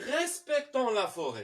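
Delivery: firm, commanding, instructive order-giving delivery. Demonstrating an imperative sentence versus a declarative one, in a commanding imperative tone. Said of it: "Je fais une autre tonalité, une autre prononciation pour démontrer à celui qui écoute que ça, c'est pas une phrase déclarative. C'est une phrase impérative".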